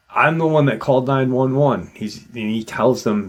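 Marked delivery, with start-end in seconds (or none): 0.1-1.9 play-acted, raised yell. Retelling how a man yelled out to a trooper: imitating someone yelling. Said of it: "he yells out".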